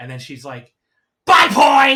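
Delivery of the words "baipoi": put-on angry shout, higher and louder. Retelling a wrestler's angry catchphrase to another speaker: imitating an angry yell. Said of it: "as angry as possible".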